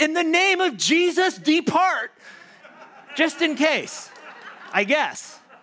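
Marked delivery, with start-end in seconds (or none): 0.0-4.1 play-acted scream, high-pitched. Retelling running down the hallway with a baseball bat: retelling a scream. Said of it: "I screamed".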